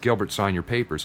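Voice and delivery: ordinary delivery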